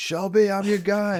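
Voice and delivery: acted, very high, shouted call-out. At the matchmakers, retelling yelling across the room to someone he clashed with. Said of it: "and I just yelled".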